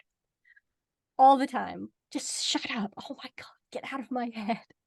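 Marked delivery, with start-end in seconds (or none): 2.1-4.6 whispered, audibly annoyed. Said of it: "And she's like".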